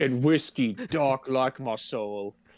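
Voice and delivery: low, slow southern drawl. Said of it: "I turned southern there".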